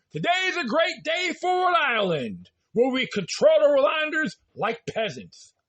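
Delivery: dripping, over-the-top acted sarcasm, high sing-song. Mocking a read-out official statement with a made-up quote: sarcastic mock quote. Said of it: "I'm being sarcastic here".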